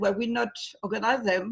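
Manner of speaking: ordinary talk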